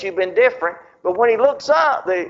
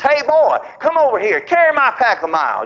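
play-acted Roman soldier, swooping, animated call-out; 2 semitones higher than usual. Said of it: "he yells out".

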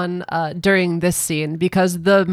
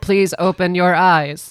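put-on mechanical toy voice. Mocking a character who talked like a toy, in a Speak & Spell robot voice. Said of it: "goddamn Mr. Speak and Spell".

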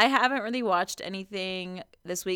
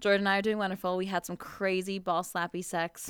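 normal talking voice

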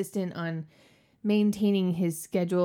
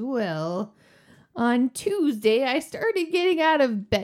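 put-on frail old woman voice, higher; 6 semitones higher, 3 dB louder than usual. Describing an imagined old couple, a speaker voices the wife, imitating a frail old woman. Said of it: "She is all shriveled and hunched up".

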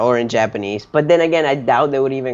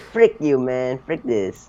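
slow, mocking voice of a fourteen-year-old. Teasing another speaker with an impression of them at fourteen: imitating a friend at fourteen. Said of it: "he's like".

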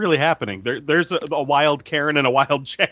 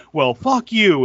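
mock screaming, louder, higher, slower; 4 semitones higher, 5 dB louder than usual. Retelling how a woman screamed at people she thought cut the line, imitating someone screaming. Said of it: "she just started screaming at them".

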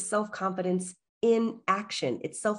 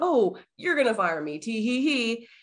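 self-deprecating joking tone with tee-hee giggle; 3 semitones higher, 3 dB louder than usual. Retelling what the other speaker said at work: imitating self-deprecating joking tone. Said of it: "this kind of self-deprecating way".

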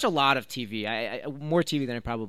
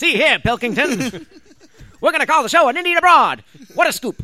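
belted-out, loud newsreel announcer voice; 11 dB louder than usual. On a podcast, after refusing to try the impression, do Ricky Gervais as a 1930s reporter. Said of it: "Ricky Gervais is a 1930s reporter".

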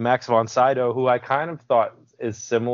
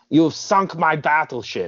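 put-on German accent; 4 semitones higher than usual. Quoting a movie line about sinking a battleship: Grim Reaper German accent. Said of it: "that sounds British. I mean, German".

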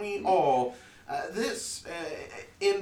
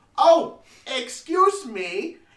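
anxious, higher and louder; 10 semitones higher, 10 dB louder than usual. Voicing a nervous, well-dressed stranger holding a letter: nervous. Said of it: "he seems very, um, nervous being here".

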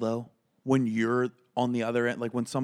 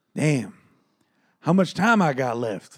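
put-on breathless, out-of-breath voice, louder; 3 semitones higher, 5 dB louder than usual. Retelling the comic asking how much time is left: imitating being out of breath. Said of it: "completely out of breath".

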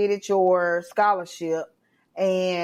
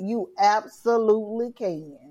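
defiant, sassy delivery with attitude; 3 semitones higher than usual. Re-enacting what an inner voice once said to the speaker: re-enacted line with attitude. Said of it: "I said it exactly like this. ... And I said it with attitude".

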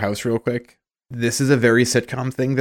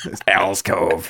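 put-on low old-smoker voice; 4 semitones lower than usual. Talking about a character's alcove and doing her voice: Al's old-smoker voice. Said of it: "she's an old smoker when I do her voice".

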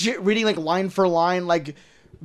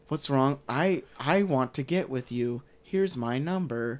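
put-on bored, flat voice, lower and quieter; 6 semitones lower, 10 dB quieter than usual. Imitating a movie character who keeps asking why he won't sleep with her: bored imitation of Gal Gadot. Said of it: "she wants it in the most boring way. Like, she just keeps being like".

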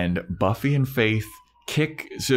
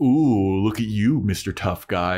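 mocking, sassy, teasing taunt. Retelling a TV scene, quoting Faith: imitating Faith giving sass. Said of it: "giving him sass".

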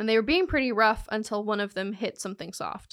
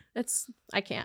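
plain

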